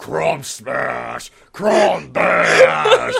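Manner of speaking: big, loud, rough, hairy caveman voice. Explaining why a name doesn't sound manly, the speaker goes into a big caveman voice. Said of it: "a big, hairy caveman just going".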